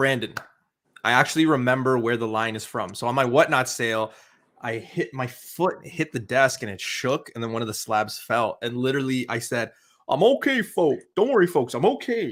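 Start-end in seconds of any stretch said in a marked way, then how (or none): 10.1-12.3 high, swooping cartoon sitcom character voice. Retelling what the speaker said after a slab fell during a sale, in a Simpsons character voice. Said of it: "I said it in that voice".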